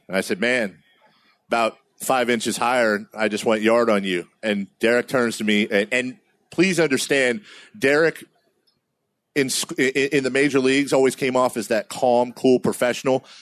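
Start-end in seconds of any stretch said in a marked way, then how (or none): none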